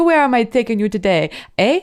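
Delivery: put-on thick, laid-on-heavy French accent. Retelling what a cab driver from the airport said, thick French accent. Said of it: "he had a very thick French accent".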